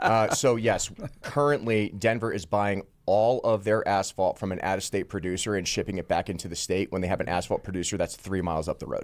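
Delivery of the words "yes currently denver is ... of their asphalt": noticeably slower, careful pace. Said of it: "They're, they're saying you're talking very fast".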